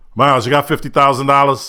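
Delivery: put-on New York accent.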